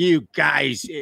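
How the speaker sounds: bad put-on British accent. Mocking how the British look down on Americans: [name]'s bad British accent. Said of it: "that was not a British accent".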